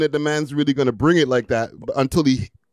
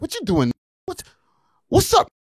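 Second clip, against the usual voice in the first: very high voice swooping around; 12 semitones higher than usual. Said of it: "With his voice".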